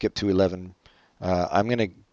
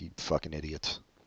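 muttered, lower and much quieter; 4 semitones lower, 17 dB quieter than usual. Speaker imagining sitting through the movie, muttering under his breath. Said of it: "muttering under my breath".

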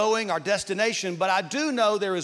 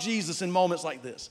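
plain

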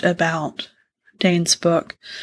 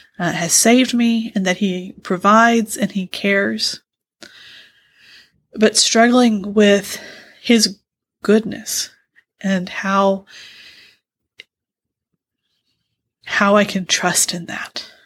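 voice holding back tears. Telling another speaker about reading a book while struggling: holding back tears. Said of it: "I'm gonna try to get through this without crying".

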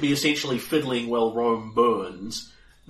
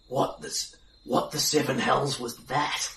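very quiet voice, quieter than before; 4 dB quieter than usual. Narrating Bryn leaning over to ask you something, in a very quiet voice. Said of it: "in a very quiet voice".

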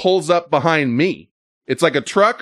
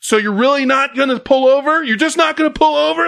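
mock, very high screaming yell; 10 semitones higher than usual. Stuck in traffic behind a driver, retelling a yell out the window. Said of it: "I even yelled like".

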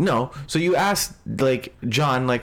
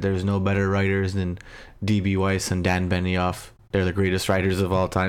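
put-on flat monotone delivery; 7 semitones lower than usual. Quoting an actor's answer about the show's ending, mock Peter Dinklage monotone. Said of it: "Very monotone".

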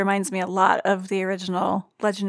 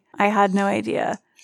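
ordinary talk

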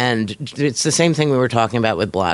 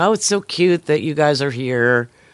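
mock condescending, patronizing tone; 4 semitones higher than usual. Retelling what a friend at NPR said: imitating Elizabeth Arnold being condescending. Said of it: "really condescending".

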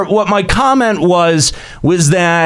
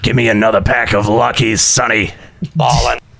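very deep, low, chain-smoking woman's voice; 8 semitones lower than usual. Continuing a bit about a woman smoking at a slot machine, chain-smoking woman voice. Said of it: "That's what that voice sounds like".

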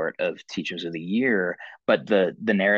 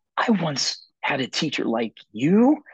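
put-on excited, awkward kid, high and swooping pitch; 8 semitones higher than usual. Retelling what a sixth-grade boy said at registration: imitating an excited, awkward boy. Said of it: "he's so overcome with excitement".

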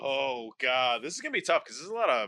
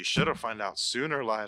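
whispered, lower pitch; 3 semitones lower than usual. Narrator voicing Simon right after the player is stabbed, whispering in the ear. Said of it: "Simon whispers in your ear".

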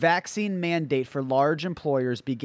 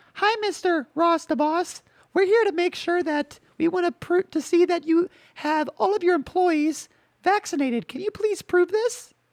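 put-on very high, wimpy, wussy girly voice. Playing an OSHA inspector talking to the boss, Mr. Ross, in a girl voice. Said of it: "I'm going to give more of a girl voice because this is not even a girl voice, a wussy voice".

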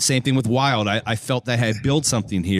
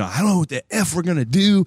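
mock high-pitched screaming outburst; 7 semitones higher than usual. Retelling a vice president going into an office: imitating someone screaming. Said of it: "he's screaming".

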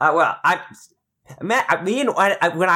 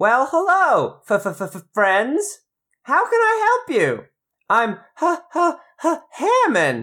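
piglet character voice, higher pitch; 7 semitones higher than usual. Voicing a little pig who opens a cottage door: little pig voice. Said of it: "a good voice for a little pig".

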